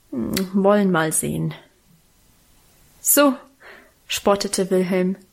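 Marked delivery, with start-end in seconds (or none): 0.1-1.5 muttered, mumbled, lower pitch. A boy turns his attention back to his exercise books, muttering to himself. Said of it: "murmelte vor sich hin".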